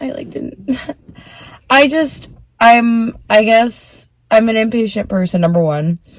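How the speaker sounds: slow, tearful voice, crying through the words. Speaker tells viewers about a breakdown this morning, crying. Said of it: "I'm already crying".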